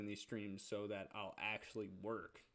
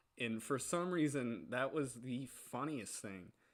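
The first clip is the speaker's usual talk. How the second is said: plain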